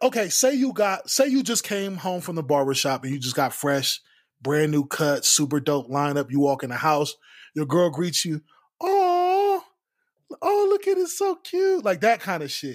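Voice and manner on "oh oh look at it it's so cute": put-on cutesy baby talk, very high and drawn out. Acting out a girlfriend greeting her partner's fresh haircut, grown woman's baby talk. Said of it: "a grown woman that uses baby talk".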